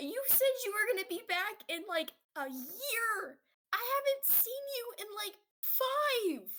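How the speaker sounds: very high wailing sob, year stretched out. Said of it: "bawling at this point".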